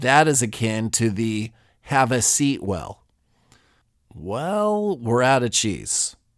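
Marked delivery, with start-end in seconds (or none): 4.2-6.1 slightly regretful, much slower. Demonstrating how to deliver mildly bad news, with a little regret. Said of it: "said with a little regret".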